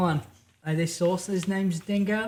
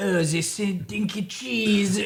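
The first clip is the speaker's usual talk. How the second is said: put-on silly French-accented voice; 2 semitones higher than usual. Recalling childhood sleepovers with friends, French accent. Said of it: "do like do a French accent".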